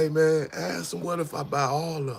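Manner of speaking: put-on whisper. Retelling a quiet request to a friend during a negotiation: retelling a whisper. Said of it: "I kinda whispered to Kev".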